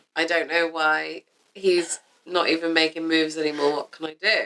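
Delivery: awkward, stiff reading. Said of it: "it's the way you've read it".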